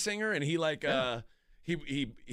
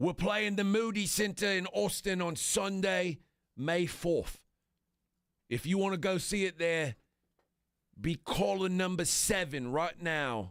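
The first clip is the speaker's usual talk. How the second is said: put-on pretty good standard British accent; 4 semitones higher than usual. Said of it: "You got a pretty good standard British accent".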